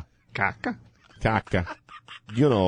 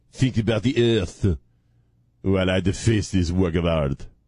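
terrible, bad, fake put-on French accent; 2 semitones lower than usual. Acting out someone defacing a work of art, in a very bad French accent. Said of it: "worst French accent I've ever done".

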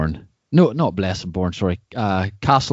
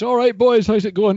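put-on shouting, higher pitch; 12 semitones higher than usual. Retelling a guest greeting friends while walking home: imitating someone shouting. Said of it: "and he shouts".

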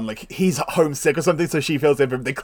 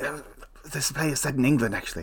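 put-on puppet whisper, quieter; 8 dB quieter than usual. Retelling a Muppet movie scene, Gonzo whispering a correction: imitating Gonzo whispering. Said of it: "Gonzo just whispers in his ear and calls him Sam to do so and whispers".

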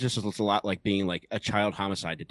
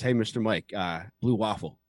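usual speaking voice

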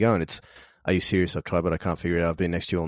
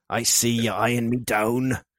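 put-on pirate voice; 4 semitones higher than usual. Asked to read the first line as a pirate, the speaker uses a pirate voice. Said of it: "What if you read that first line as a pirate?".

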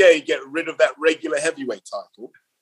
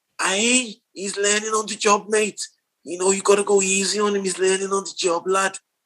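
loose put-on Scouse accent, pitched higher than normal; 5 semitones higher than usual. Saying someone is learning on the job, in a vague Scouse-ish accent. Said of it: "Don't ask what accent that was".

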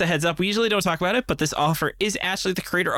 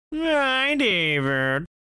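attempted cat voice, higher pitch; 5 semitones higher than usual. Greeting the co-host at the start of the show, in a cat voice. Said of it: "was that a cat voice?".

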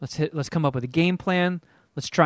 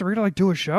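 puppet-like put-on voice, higher; 4 semitones higher than usual. Retelling what Jeff said while playing Fortnite: imitating Jeff. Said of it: "not Jeff Clark impersonations".

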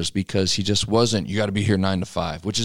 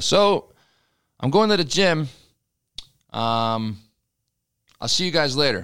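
loud, unhurried announcing voice, pitched up; 6 semitones higher than usual. Retelling a leader announcing he is off to the gym: imitating Schrader talking loud. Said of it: "just kinda talk loud".

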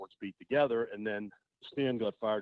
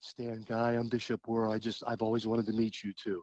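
put-on soft, small, hushed little voice. Retelling a bishop on TV greeting Stan: Bishop Wuerl's soft little voice. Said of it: "in his soft little voice goes".

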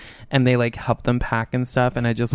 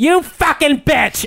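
very high, shrill, loud, furious screeching scream; 7 dB louder than usual. Retelling a drunken fight between two women: imitating someone yelling. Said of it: "she's yelling at her".

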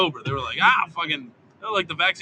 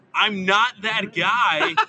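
slow, mild delivery with no strain; 4 semitones higher than usual. Retelling yelling back across a street: imitating own past yell. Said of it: "And then I just yelled back".

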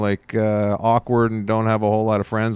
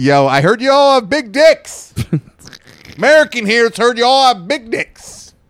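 shrill, full-volume, very high, drawn-out yell; 13 semitones higher, 9 dB louder than usual. Telling a friend what to shout on landing in Italy, yelling. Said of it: "I'm yelling in your apartment".

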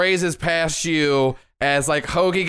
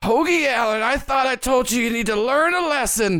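high-pitched witch character voice; 8 semitones higher than usual. As the witch who cursed Hoagie, calling out to him, in a witch voice. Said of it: "the same witch that cast a curse on you".

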